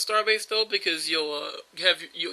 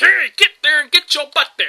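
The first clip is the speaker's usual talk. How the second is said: high, loud yell. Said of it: "Baldwin yelling is".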